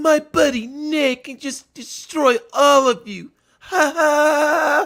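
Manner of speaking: very high, very slow lame-dude voice, long drawn ha. Retelling what a guy said while playing Halo: imitating Brandon's voice. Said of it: "Imagine coming in with a voice like that".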